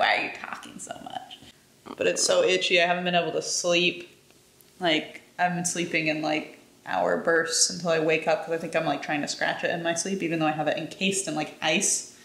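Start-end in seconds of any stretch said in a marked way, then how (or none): 0.0-1.4 whispered, put-on puppy voice. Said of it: "He's like".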